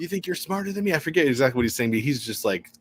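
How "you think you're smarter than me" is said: high, taunting, berating screaming. Retelling what he screamed at her during a fight: imitating someone screaming. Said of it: "starts screaming at her".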